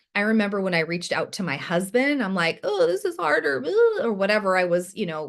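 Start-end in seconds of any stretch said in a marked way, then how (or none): 2.7-3.7 high-pitched whiny voice. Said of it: "kind of whining about".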